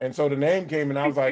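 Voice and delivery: ordinary talk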